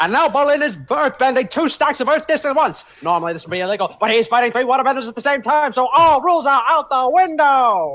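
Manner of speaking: very high arena sports announcer voice. Testing a sports announcer voice before the game, as the Avatar Korra announcer. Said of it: "my Avatar Korra announcer".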